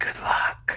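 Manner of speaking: hushed, breathy, soft whisper. Walking past another character to the bar: whispering in character. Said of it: "just kinda whisper".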